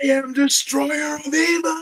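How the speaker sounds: very high, shrill, frantic scream. Describing a SpongeBob clip where DoodleBob gets erased, imitating DoodleBob screaming. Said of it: "he's like just screaming like".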